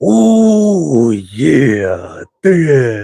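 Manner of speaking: very slow, swooping wrestler drawl, opening dragged out. Making a match pick, then signing off as the Macho Man would: Macho Man voice. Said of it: "as the Macho Man would say ... that voice".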